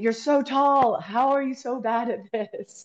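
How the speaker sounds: high-pitched shouting yell. Recalling losing a pool floaty race with a teammate: retelling a yell. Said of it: "So I yelled at him like".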